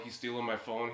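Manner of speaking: ordinary delivery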